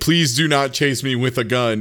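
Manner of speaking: plain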